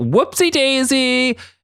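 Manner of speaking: high, slow cutesy singsong. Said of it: "And she's like".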